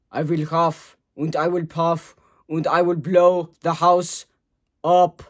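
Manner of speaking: loud, booming, big-bad-wolf voice. Doing the big bad wolf in a kindergarten play, as Arnold Schwarzenegger as big bad wolf. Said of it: "impression of Arnold Schwarzenegger playing the big".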